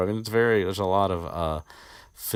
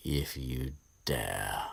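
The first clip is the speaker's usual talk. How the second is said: low, hushed, soft put-on voice; 5 semitones lower, 7 dB quieter than usual. Acting out a scene between Lockhart and Snape, in a Snape voice. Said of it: "no good with the Snape voice today".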